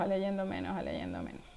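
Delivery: fading repetition.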